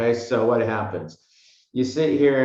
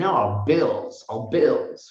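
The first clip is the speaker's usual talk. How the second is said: put-on old-world style English accent; 3 semitones higher than usual. Explaining liabilities, picturing someone saying it in an English accent. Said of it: "somebody with an English accent saying".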